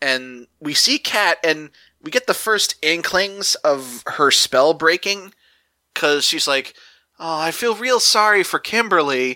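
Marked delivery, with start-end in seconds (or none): 7.2-9.4 put-on, high-pitched, dripping sarcasm. Retelling a scene, acting out Kat's line: imitating Kat, mock-sarcastic. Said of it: "she says it really sarcastically".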